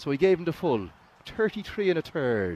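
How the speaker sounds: thick rural Irish brogue. Describing the voice he was asked for, the speaker slips into a stereotypical country Irish accent. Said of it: "your stereotypical Irish accent from down in the country".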